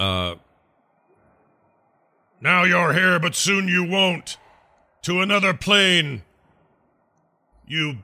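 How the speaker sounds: very high, loud bellowing dragon monster voice. Player in a game voices a dragon casting a spell: big bellowing dragon voice. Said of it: "I say it in my big bellowing dragon voice".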